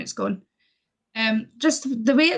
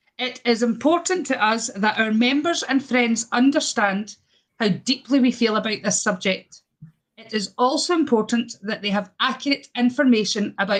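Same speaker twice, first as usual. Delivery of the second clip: ordinary talk, nothing marked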